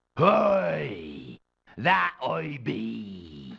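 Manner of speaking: fake pirate accent, "be" drawn out. Asked if he is the first mate, a man answers in a fake pirate accent. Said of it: "drop the fake accent".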